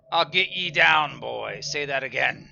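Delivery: put-on very loud, high-pitched yell in pirate accent. Narrator voicing ghostly figures arguing with each other, shouting in pirate accent. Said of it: "shouting at each other in like pirate accents".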